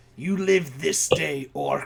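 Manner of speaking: hostile, snarling voice. Player voicing a game character who addresses an orc, snarling. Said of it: "he just kind of snarls at you like".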